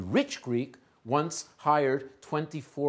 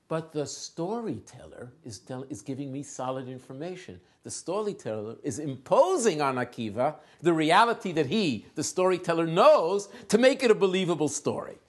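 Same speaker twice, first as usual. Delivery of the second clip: usual speaking voice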